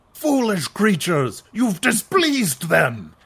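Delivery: very loud warrior shout. Narrating a scene where one of the Klingons speaks up, Klingon shouting. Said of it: "one of the Klingons shouts".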